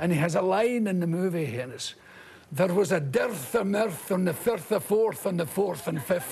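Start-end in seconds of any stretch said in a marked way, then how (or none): 2.5-6.3 very bad fake Scottish accent. Quoting a golf pro's line from a movie, in the worst fake scottish accent. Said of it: "The worst fake Scottish accent ever".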